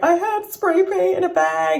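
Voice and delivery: high, loud, panicked, out-of-breath blurt. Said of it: "So I'm panicking".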